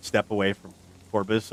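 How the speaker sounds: ordinary talk, nothing marked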